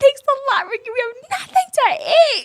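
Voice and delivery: play-acted very high, very loud, shrill furious yelling. Recalling being mad at someone in the kitchen: imitating angry yelling. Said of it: "I was yelling, I was so mad".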